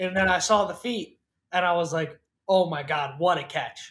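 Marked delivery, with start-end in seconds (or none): 2.5-3.9 put-on amazed, blown-away voice. Retelling own reaction on seeing the catch: retelling being blown away. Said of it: "blown away".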